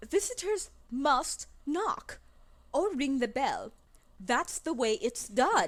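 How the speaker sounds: put-on haughty, stuck-up British accent, high and slow. Reading a character's line about visitors knocking: British accent. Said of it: "Turning British".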